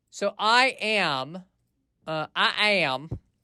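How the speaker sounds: Southern American accent. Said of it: "getting a Southern accent there".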